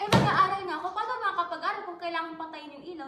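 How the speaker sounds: worked-up ranting.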